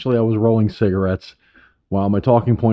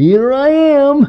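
very high, loud, animated cartoon clown voice; 7 dB louder than usual. Hearing the hashtag, speaker announces his own arrival in a Bozo the Clown voice. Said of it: "like Bozo the animated Bozo the Clown voice".

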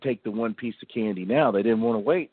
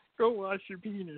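impression of a man, much higher and quieter; 10 semitones higher, 7 dB quieter than usual. Repeating the line after the other speaker praises it, impression of the man discussed. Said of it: "That's how he sounds".

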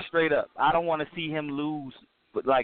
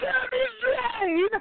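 put-on very high, all-out emotional hard shout. Describing a wrestler coming out, imitating a hard emotional shout. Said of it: "He just come out saying it all hard".

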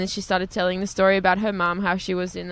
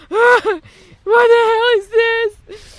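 mock drawn-out sobbing wail, very high and loud; 11 dB louder than usual. Retelling the family crying in a parked car, imitating crying. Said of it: "were all just crying, going".

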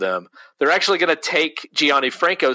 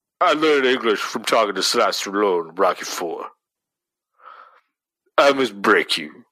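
deep, low growl in short lines; 5 semitones lower than usual. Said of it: "keeps his voice low and growly".

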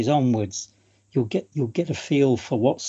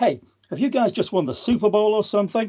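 fake American accent, higher pitched; 7 semitones higher than usual. Quoting a friend's father remarking on the team's celebration, in a pseudo-american accent. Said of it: "I can only do this in an American accent".

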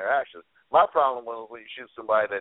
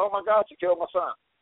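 mock scream, higher; 7 semitones higher than usual. Retelling a mother's words after police shot her son: imitating a mother screaming. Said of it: "the mom starts screaming".

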